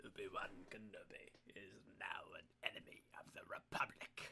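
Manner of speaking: bad put-on voice, breathed out in a whisper. Quoting a film line for an audience, in a bad Emperor voice. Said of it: "my bad Emperor voice".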